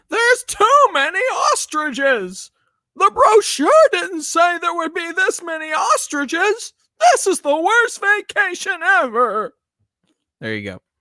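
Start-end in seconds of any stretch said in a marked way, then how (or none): 0.1-9.5 shrill, loud, drawn-out, slow comic voice. Answering a request to do a voice: Don Knotts impression. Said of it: "Don Knotts, here you go".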